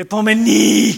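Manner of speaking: epomene with the stress leaned on its last e. Recalling how to say epomene, with stress on its final e. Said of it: "I have to stress that last E".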